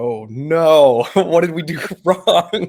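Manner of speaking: heavy sarcasm, very loud, very slow, drawn-out dismay. Retelling own reply to a client's impatient text: retelling own super sarcastic reply. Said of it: "super sarcastically".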